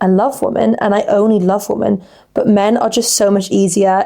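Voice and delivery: ordinary talk, nothing marked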